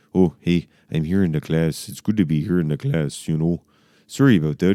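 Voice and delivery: put-on Canadian accent in English. Giving advice on which accent to pick, demonstrating: Canadian accent. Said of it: "Or you could do a Canadian accent".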